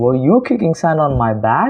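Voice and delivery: intonation rising upward on back. Showing learners how to ask a question: rising question intonation. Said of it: "So it's like".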